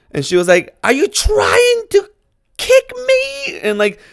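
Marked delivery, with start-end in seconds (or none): 0.9-3.6 very high, drawn-out, swooping, crazy horror-movie shriek. Retelling a woman on a train accusing a man: imitating a woman screaming. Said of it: "started screaming".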